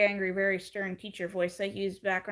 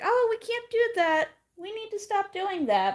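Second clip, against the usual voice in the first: speaking through laughter, high and swooping; 12 semitones higher than usual. Retelling what a mom said about her child: imitating a mom laughing while talking. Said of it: "the mom was laughing and was like".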